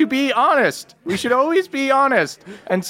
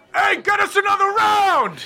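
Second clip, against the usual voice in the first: loud high-pitched yelling; 7 semitones higher than usual. Voicing a big tavern patron demanding drinks: yelling as the bigger dude. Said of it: "the bigger dude, uh, yells out".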